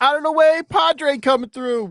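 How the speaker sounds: shrill, very loud, high yell. A player voices his character yelling to the crowd: yelling to a crowd. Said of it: "I'll just yell to the crowd".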